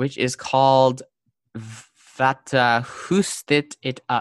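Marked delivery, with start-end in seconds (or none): 1.6-4.2 slow French accent on a Swedish word. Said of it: "I'm, like, using a French accent on, like, a Swedish word".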